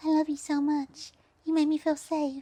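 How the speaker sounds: put-on high-pitched babyish baby-talk voice. Quoting Lyric's line from some baby talk: Lyric's baby voice impression. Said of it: "an impression of Lyric's baby voice".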